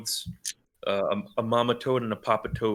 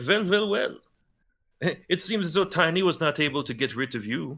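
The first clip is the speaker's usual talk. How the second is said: put-on, pitched-up Swedish accent; 6 semitones higher than usual. Narrator voicing the extortionists as they turn to the players, swedish accent. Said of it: "in a Swedish accent".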